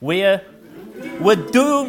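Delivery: bad Scottish accent. Speaker quotes a famous Dad's Army catchphrase; bad Private Fraser impression. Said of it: "That's not a very good Scots accent".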